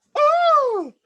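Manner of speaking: high, loud panicked scream. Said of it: "she screams".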